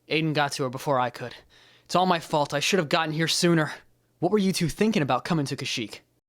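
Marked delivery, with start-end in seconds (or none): 4.2-6.0 sharp, loud, high, accusing tone. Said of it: "Watch your tone".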